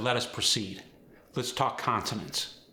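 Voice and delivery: ordinary talk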